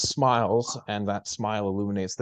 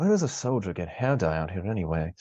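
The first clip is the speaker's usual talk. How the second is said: mumbled, muttered under breath. Narrator voices a woman muttering to someone else as the player leaves, mumbled under her breath. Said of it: "mumble under her breath".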